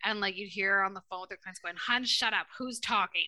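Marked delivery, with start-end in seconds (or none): 1.8-3.3 put-on cranky, snippy, bitchy old woman voice. Retelling how a woman at the psychic shop talked to clients on the phone, imitating a bitchy old lady. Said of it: "and she sounded just like that".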